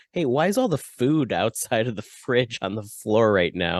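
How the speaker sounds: ordinary talk, nothing marked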